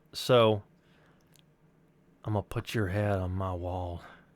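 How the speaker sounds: put-on sinister, menacing, natural Southern accent. Retaking a line as directed, in a sinister southern voice. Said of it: "but do, but sinister".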